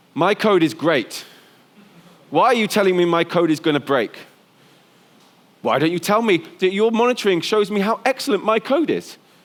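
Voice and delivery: mock curt, clipped delivery. Retelling a developer's reply about monitoring: imitating a curt reply. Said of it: "curtly replied to me".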